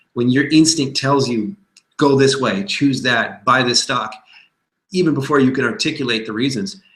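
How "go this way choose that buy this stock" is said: plain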